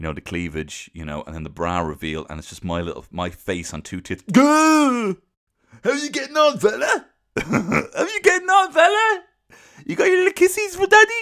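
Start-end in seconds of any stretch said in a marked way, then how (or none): 4.3-11.2 very high, loud put-on South African–Kiwi accent, stretched "how". Speaker voicing a character in a bit: South African–New Zealand accent. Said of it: "I don't know what accent this is".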